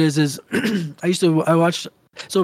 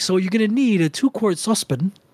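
mocking pretentious pronunciation, imitated accent, higher pitch; 3 semitones higher than usual. Imitating a man giving cooking instructions after hitting millions, mocking pretentious pronunciation. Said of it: "a pretentious way of pronouncing that".

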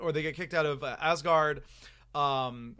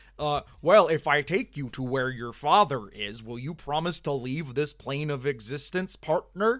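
bad, clumsy fake American accent; 3 dB louder than usual. Retelling a character's offer from a movie, try your Benedict Cumberbatch as an American voice. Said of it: "my Benedict Cumberbatch as an American voice".

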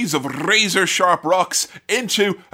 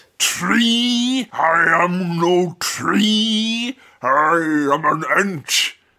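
mock tree-creature voice, playful. Joking about a talking tree, doing a Treebeard voice. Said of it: "that was just me doing a fun voice".

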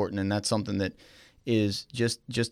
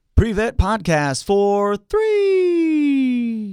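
very high, very loud arena announcer call, stretched words; 13 semitones higher, 8 dB louder than usual. Asked to call a three-pointer for the show's name: basketball announcer three-point call. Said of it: "say it in the voice so".

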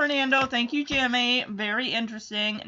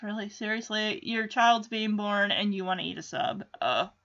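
ordinary talk, nothing marked

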